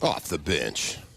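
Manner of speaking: fake booming deep voice. Saying the show's name after the welcome: put-on big deep voice. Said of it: "Is that your big voice guy".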